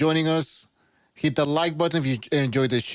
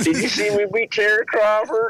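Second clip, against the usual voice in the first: put-on boasting voice, higher and louder; 6 semitones higher, 4 dB louder than usual. Joking about him in an asylum: imitating Errol Spence. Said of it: "He's like".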